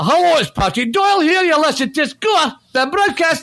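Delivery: Scottish Edinburgh accent. Offering different parts of Scotland for a show greeting, you demonstrate an Edinburgh accent. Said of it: "I have an Edinburgh".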